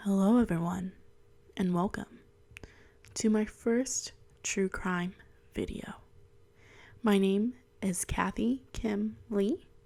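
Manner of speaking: hushed, soft whisper. Opening her first true crime video, whispering. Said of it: "I don't know why I'm whispering".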